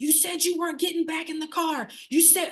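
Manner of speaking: frantic, high-pitched, freaked-out screaming. Retelling how her son reacted to her work shirt: imitating her son screaming. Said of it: "screaming at me".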